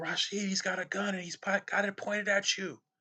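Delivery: mock very high, frightened, urgent, freaked-out voice. Retelling cops pointing guns at them, the speaker imitates a friend sounding freaked out. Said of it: "the sound in his voice, like he was like freaked out".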